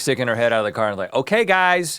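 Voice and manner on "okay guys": high-pitched, motherly calling voice. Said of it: "Momming it up".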